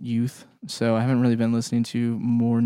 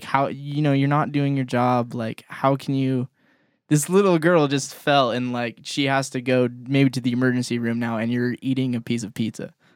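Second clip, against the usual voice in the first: ordinary talk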